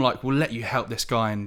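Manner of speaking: plain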